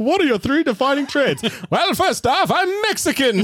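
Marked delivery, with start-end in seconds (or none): 1.7-3.4 fake old-fashioned 1930s-style British accent. Asked for three defining traits, answering in a put-on British-sounding accent. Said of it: "Why does that sound more British".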